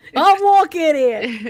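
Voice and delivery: put-on laughing Boston accent. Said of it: "admit my Boston accent is a debuff".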